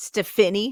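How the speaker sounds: Stephanie, stress on middle syllable -pha-. Explaining how they say the name: stress on middle syllable of stephanie. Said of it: "they put an accent on the third on that middle syllable".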